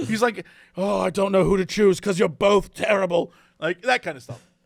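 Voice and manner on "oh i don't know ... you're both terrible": put-on angry chef voice, lower. Retelling a Hell's Kitchen episode: imitating Gordon Ramsay, pissed off. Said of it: "He's so pissed off".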